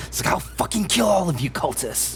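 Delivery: high-pitched, menacing, hissing voice. Game master voices a character attacking the players, hissing. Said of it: "before she hisses".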